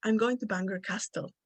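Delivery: ordinary talk, nothing marked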